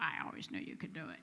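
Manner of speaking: put-on heavy Georgia accent, breathy, near whisper. Retelling a sponsor's proud words on being named CEO: Clark Cook's thick Georgia accent. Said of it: "in his very thick George".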